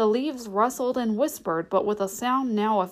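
ordinary delivery

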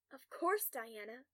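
ordinary delivery, nothing marked

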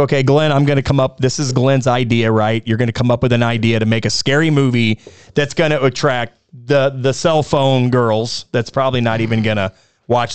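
ordinary delivery

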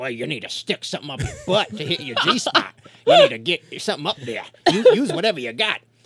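belted out loudly, every word hit hard. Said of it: "she didn't sound like Samuel L. Jackson".

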